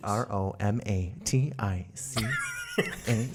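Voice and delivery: carefully enunciated like a book reader. Guest spells out their Instagram handle for the audience, enunciating like a book reader. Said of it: "Why you sound like a book reader?".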